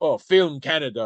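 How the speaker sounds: normal talking voice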